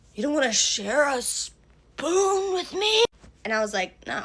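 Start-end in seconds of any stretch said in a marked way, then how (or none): 0.2-3.0 high, drawn-out, mad, indignant tone. Retelling how he reacted when she asked for two spoons: imitating him getting mad. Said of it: "he gets all mad at me".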